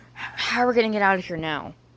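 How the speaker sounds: whispering. Reading a story aloud, voicing Mike hiding under a table: whispering. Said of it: "Mike says to himself as he whispers".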